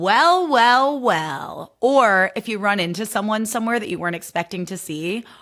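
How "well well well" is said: very smug, self-satisfied, pitched-up delivery. Showing how to deliver a phrase after being right: very smug tone. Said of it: "deliver it with the smuggest tone possible".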